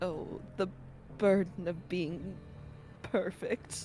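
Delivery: muttered whisper under breath. Playing a character lamenting to himself: whispering under his breath. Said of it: "Under his breath, he whispers".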